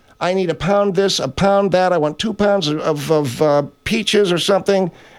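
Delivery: ordinary delivery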